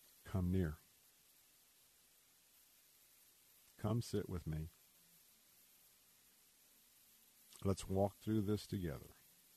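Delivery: quiet, soft, hushed whisper. Voicing God inviting the listener to come near: whispering God's words. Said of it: "in a whisper".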